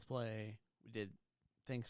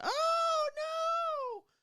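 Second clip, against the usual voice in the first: very high, very loud shrill scream, drawn-out no; 9 dB louder than usual. Retelling a movie where a wife wakes up to a doctor, retelling a scream. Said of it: "and she's screaming".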